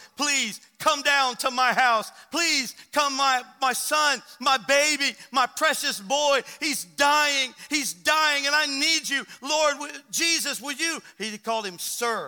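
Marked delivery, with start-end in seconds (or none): 0.2-11.0 raised, desperate, imploring voice. Retelling a father's plea to the Lord for his dying son: acting out desperate begging. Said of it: "He was begging".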